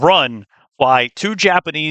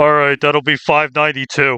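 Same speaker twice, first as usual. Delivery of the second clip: tough, butch-sounding voice; 2 semitones higher than usual. Imagining a tiny cafe robot announcing the coffee price: butch ass voice. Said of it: "the most butch ass".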